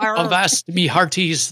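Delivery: stock pirate-style talking voice. Showing how experts talk like a pirate: talking like a pirate. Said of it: "know how to talk like a pirate".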